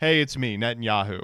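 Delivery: mock Boston accent, low. Mocking how Netanyahu talks to other Americans, Netanyahu talking like a Bostonian. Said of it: "speaks like a Bostonian".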